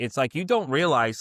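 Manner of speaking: ordinary delivery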